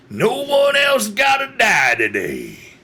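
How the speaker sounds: very loud put-on voice. Voicing Mister Hayes addressing everyone in the area: Mister Hayes's very loud voice. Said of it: "you can all hear a very loud voice".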